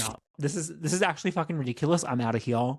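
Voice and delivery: ordinary delivery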